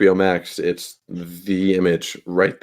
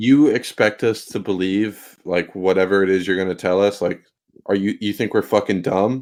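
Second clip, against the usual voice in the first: plain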